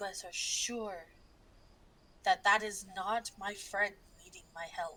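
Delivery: as quiet as possible, hushed, almost whispering. Voicing a character leaning in to the group: speaking as quietly as possible. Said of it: "speak as quietly as possible".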